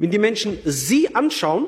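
sie stressed, pitched high and drawn wide.

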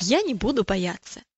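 usual speaking voice

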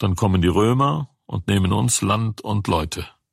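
ordinary delivery

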